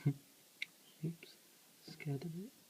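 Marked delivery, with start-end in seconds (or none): 1.9-2.5 a bit quiet, soft, hushed whisper. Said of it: "Sorry if I'm talking a bit quiet".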